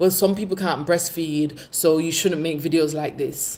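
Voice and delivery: ordinary talk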